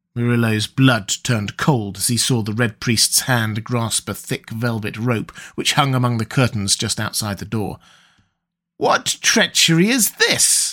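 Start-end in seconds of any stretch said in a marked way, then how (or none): 8.8-10.8 high, drawn-out, accusing cry. Seeing a priest grasp a rope by the door: crying out. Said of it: "cried Murillo".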